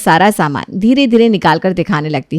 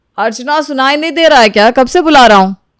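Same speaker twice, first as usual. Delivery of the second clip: calling out in a high pitch; 5 semitones higher than usual. Calling Archana again after she hasn't answered, shouting. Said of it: "तो क्यों चिल्ला रहे हो?".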